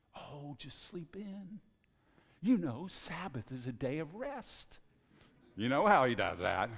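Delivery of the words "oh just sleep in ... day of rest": put-on tempting half-whisper, close to the ear. Acting out the devil's voice on Sabbath morning: devil half-whispering. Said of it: "the devil whispers in your ear".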